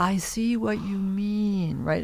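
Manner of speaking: drawn-out delivery. Recalling how a collaborator always answered critique, in a very slow voice. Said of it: "In a very right. slow voice".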